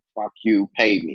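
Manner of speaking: ordinary delivery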